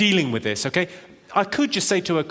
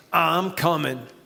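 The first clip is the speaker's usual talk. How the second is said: put-on sexy 1970s New York voice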